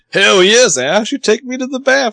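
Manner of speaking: put-on Southern accent. Recapping a scene, the speaker voices one line in an almost southern accent. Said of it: "That was like almost Southern".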